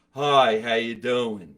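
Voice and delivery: angry diaphragm voice. Showing the other speaker how talking from the diaphragm sounds: sounding mad. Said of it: "I'm very mad because it's coming from here".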